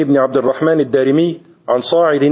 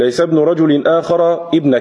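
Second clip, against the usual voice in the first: ordinary talk, nothing marked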